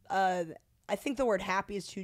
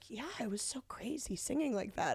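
put-on soft-spoken voice, quieter; 3 semitones higher, 7 dB quieter than usual. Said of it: "he has a very soft-spoken speaking voice".

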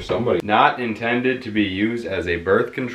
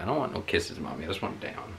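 voice of a pet cat; 2 semitones lower, 11 dB quieter than usual. Voicing the cat that is struggling against kisses: voicing the cat. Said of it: "He's like".

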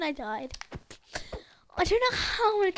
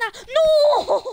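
loud, slow, panicked cry. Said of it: "I'm literally panicking right now".

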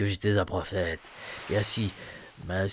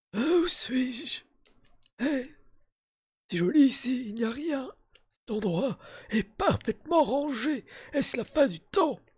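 put-on old man voice, pitched very high. Playing a game aloud, the speaker voices a character's dialogue in an old man voice. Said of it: "Bah du coup voix de vieux hein".

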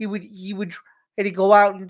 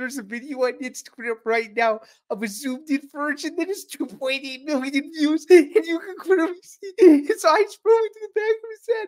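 stifled laughter, pitched up and swooping; 7 semitones higher than usual. Describing a viral video clip on a show, holding back a laugh. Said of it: "I'm trying not to laugh".

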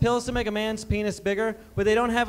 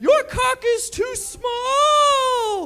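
put-on very high, very slow, stretched-out, shrill cry; 5 dB louder than usual. Retelling what a wasted woman exclaimed to a guy in a bedroom: retelling an exclamation. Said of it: "She exclaimed".

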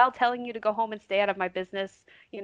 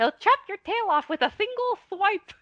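put-on very high, tiny, lisping child voice; 12 semitones higher than usual. Recalling an audiobook where adults do child voices: lisping Tuddy child voice. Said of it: "child voices. It's like, he has a lisp".

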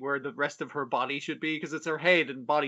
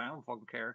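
put-on flippant tone, lower and quieter; 3 semitones lower, 12 dB quieter than usual. Retelling how a character brushed off a question: imitating a flippant reply. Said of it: "she's so flippant".

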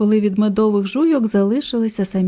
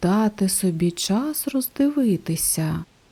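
quietly murmuring to himself; 5 dB quieter than usual. Narrator reading Salvator echoing the jaguar's words, quietly repeating to himself. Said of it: "тихо повторив про себе Сальватор".

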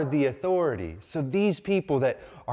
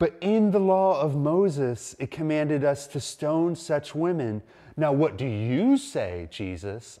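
plain

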